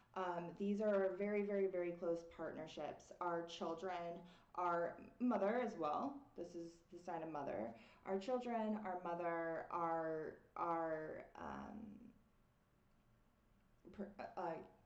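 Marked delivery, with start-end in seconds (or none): 8.0-14.4 stuttering, stammering, much slower. Trying to say too many things at once, stuttering. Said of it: "I'm I'm stuttering".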